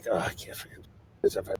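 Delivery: muttering under breath. A player acts out their character in a game, muttering under breath. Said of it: "I just start muttering under my breath".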